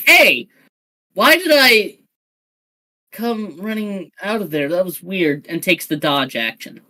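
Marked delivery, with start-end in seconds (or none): 0.1-5.5 irritated, miffed, pissed-off complaining tone. Voicing a fighter rushing back in, kinda pissed off. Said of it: "kinda pissed off. He's like".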